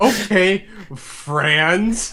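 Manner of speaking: dry, mocking, sarcastic, drawn-out delivery. Retelling how a game character answered the player's german accent, retelling a sarcastic reply. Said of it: "like really sarcastically".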